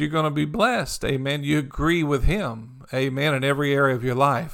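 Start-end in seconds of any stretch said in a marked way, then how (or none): none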